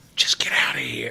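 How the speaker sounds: just-between-us urging tone. Retelling what the cashier said: imitating a conspiratorial whisper. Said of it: "It was like this conspiratorial".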